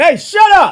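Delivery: sudden, very loud, very high-pitched shout. Dealing with a new puppy while on mic, the speaker is yelling. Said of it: "I'm sorry if I yelled at y'all ear".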